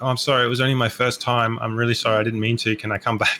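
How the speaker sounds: ordinary talk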